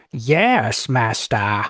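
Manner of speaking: weird voice with a long drawn-out "yes". Game master voicing an unseen figure answering its master, weird voice. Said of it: "you hear a weird voice go".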